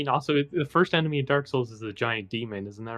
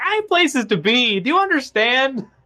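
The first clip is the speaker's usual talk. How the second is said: put-on mock yell, much higher and louder; 12 semitones higher, 6 dB louder than usual. Narrating what he yells in his mind at these guys, mock yelling at them. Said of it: "he's yelling at these guys like".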